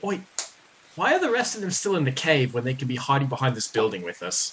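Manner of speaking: whispering quickly. In a role-play, the speaker's character whispers to Kaj: whispered aside. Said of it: "I'm gonna whisper to Kaj real quick".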